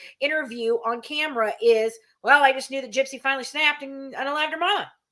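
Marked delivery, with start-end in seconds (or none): 2.2-4.9 put-on casual, matter-of-fact, nonchalant offhand tone. Retelling a first on-camera interview reaction: imitating Bobby's nonchalant tone. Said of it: "he said it with such just".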